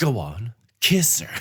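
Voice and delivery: threatening, menacing, creepy voice. Retelling a creepy celebrant telling a groom to kiss the bride, mock-threatening officiant. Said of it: "what sounds like a threatening manner".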